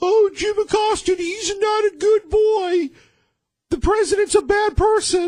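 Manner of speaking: very high, slow, drawn-out derisive voice. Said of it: "I don't know why I do that voice".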